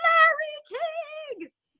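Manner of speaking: long high-pitched scream.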